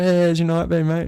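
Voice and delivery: high, chirpy delivery. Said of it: "rocks up all chirpy".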